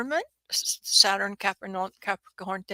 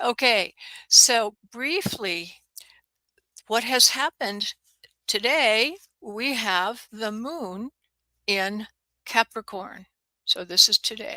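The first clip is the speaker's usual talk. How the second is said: every word mechanically pronounced, slow and robot-like. Words are cutting out on the call, so the speaker says this carefully enunciated, robot-like. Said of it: "I'll sound like a robot".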